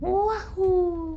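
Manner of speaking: high, loud cheering whoop.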